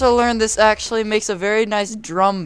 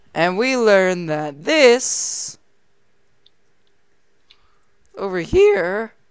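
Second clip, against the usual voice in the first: cracking, breaking voice. Speaker recapping the lesson for the class, voice cracking. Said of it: "excuse my voice crack".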